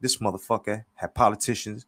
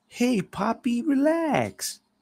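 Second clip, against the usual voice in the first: much higher, smiling voice. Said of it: "says with a smile".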